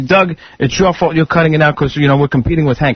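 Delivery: ordinary talk, nothing marked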